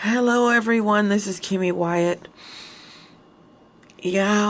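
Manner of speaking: tired, worn-out voice after laughing. Introducing yourself to everyone after a long laugh, exhausted from laughing. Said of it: "I sound exhausted because I've been laughing".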